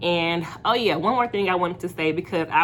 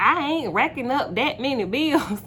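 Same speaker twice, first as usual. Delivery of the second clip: put-on woman's voice, pitched higher; 7 semitones higher than usual. Quoting what a woman said in a car, imitating how she talked. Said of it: "I'm sorry to like do the voice, but like that's how she sounded".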